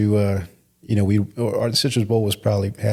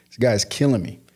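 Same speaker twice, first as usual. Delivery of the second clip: plain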